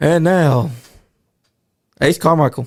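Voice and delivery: dull, plain, flat, unexcited delivery. Showing a dull way a ring announcer might say the name: flat, unexcited announcement. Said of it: "if he announced you like this".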